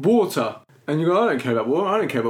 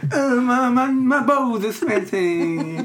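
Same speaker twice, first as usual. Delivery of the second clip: put-on whiny old man voice, much higher; 7 semitones higher than usual. Showing a co-host the impression usually done of him: put-on whingy old man voice. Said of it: "I normally do the old man, whingy voice".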